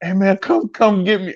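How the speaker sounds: put-on, very high-pitched, frightened, pleading voice. Retelling calling again from the payphone: retelling a scared plea. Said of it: "I was so scared".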